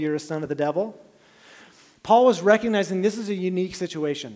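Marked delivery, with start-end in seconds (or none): none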